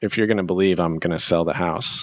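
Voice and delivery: ordinary delivery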